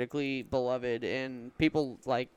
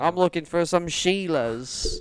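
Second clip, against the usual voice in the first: joking put-on Australian accent, higher and louder; 4 semitones higher, 7 dB louder than usual. Pretending to be the composer Borislav Slavov: joking Australian accent. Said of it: "He must be Australian or something".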